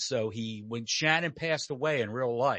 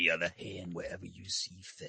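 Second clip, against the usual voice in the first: put-on late-night radio DJ voice, lower and quieter; 4 semitones lower, 6 dB quieter than usual. Doing a Wolfman Jack impression after another speaker asks for one: Wolfman Jack impression. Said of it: "can you do a Wolfman Jack impression?".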